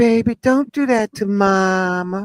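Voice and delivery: soft, gentle motherly coaxing, drawn-out mama. Retelling how a mother scolded her son: imitating a soft mother. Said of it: "mama's so soft and she's so mama".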